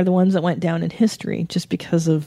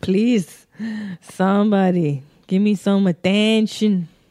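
slow, drawn-out, put-on Mexican accent; 3 semitones higher than usual. Imitating a guy who wanted attention: imitating his Mexican accent. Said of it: "That's how he talked, too, 'cause he's Mexican".

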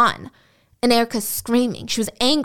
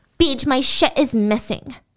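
put-on sulky girl voice, much slower. Acting out what BJ said to Beach upstairs, imitating BJ like a girl mad at daddy. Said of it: "she said it like a girl telling her daddy about something she was mad about".

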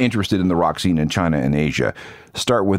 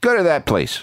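put-on higher-pitched New York street accent; 9 semitones higher than usual. Retelling meeting Seymour on the street one night, in his New York accent. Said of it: "he said in his New York accent".

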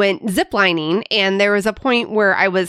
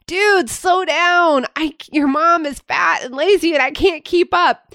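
mock high, raised yell, called out far; 9 semitones higher than usual. Retelling calling out to a son hiking far ahead: imitating own yell. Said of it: "I yell out to him".

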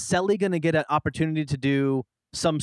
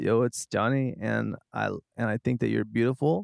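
put-on calm male voice, much lower pitch; 5 semitones lower than usual. Doing voices for Sally and Johnny, now imitating Johnny, put-on calm. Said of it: "Doesn't he sound like that kind of?".

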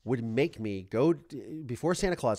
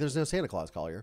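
put-on blunt, plain, matter-of-fact delivery. Retelling what the foster mother said about santa claus: imitating a matter-of-fact tone. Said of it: "Just like a matter of fact".

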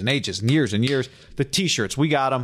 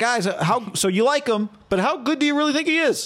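high, prying, eager fan-like voice. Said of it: "you get to ask questions like a fan".

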